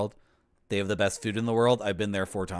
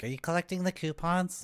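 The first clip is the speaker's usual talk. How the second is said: mocking put-on store-clerk voice, pitched up; 10 semitones higher, 3 dB quieter than usual. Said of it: "they're like".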